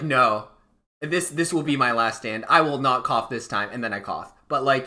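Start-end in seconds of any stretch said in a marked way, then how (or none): none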